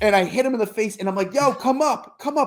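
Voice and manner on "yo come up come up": mock high, stretched-out shouted call. Retelling waving someone up to a party: imitating own screaming. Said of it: "But I'm screaming".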